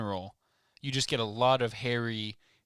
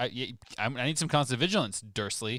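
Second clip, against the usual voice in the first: usual speaking voice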